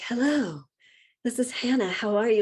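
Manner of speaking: polished, over-proper, extra-formal telephone voice. Describing how the speaker sounds on the phone with donors: imitating own formal phone voice. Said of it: "it's like our phone voices".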